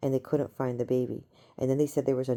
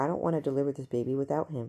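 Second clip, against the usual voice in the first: put-on panicking woman's voice. Retelling a dream where a pregnant woman panics: imitating a panicking woman. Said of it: "this woman's panicking".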